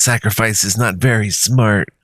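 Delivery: words spoken through laughter. A drake answers the sacrifice who asked to pass, in a laughing drake voice. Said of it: "as it laughs".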